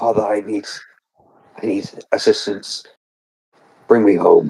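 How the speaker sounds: speaking in a hushed whisper. Speaking in character into gauntlets to call for help: whispering. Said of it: "whisper into it".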